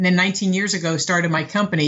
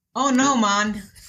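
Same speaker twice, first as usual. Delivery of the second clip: best-attempt put-on Jamaican accent; 3 semitones higher than usual. Asked by the host for a best Jamaican impression: Jamaican accent impression. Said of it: "Give me your best Jamaican impression".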